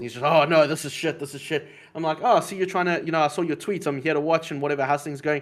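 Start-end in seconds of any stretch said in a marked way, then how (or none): 0.2-1.7 mock angry grumbling. Retelling what the guy he came to watch said, imitating angry complaining. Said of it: "He's so angry with the world".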